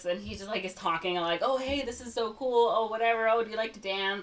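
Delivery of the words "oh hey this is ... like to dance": put-on nervous babbling, higher pitch. Retelling a scene where a character babbles on a date: imitating nervous Usnavi. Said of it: "super nervous".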